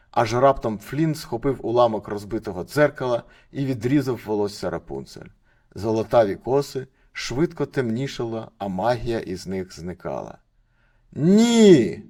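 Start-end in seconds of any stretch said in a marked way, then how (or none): 11.1-11.9 very high, very loud, drawn-out shriek. As the magic hair is cut off, the mother screams. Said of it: "закричала мати Готель".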